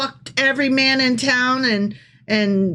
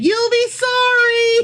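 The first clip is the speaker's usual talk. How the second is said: very high, acted yell, "sorry" drawn out; 11 semitones higher than usual. Comparing scripture to a mom yelling after her kid: imitating a mom yelling. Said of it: "like a shitty mom yelling after her kid".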